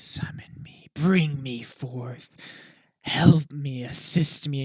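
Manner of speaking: slow, ghostly stage whisper. Voicing creatures inside a cloak calling to a player: whispering creature voices. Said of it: "whispers going through your head".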